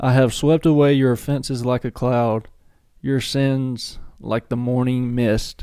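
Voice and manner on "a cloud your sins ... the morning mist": normal talking voice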